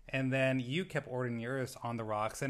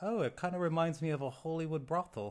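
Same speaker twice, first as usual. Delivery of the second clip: bad, snarky, put-on Australian accent; 4 semitones higher than usual. Quoting a contestant on a show: terrible Australian accent. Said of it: "That accent was terrible".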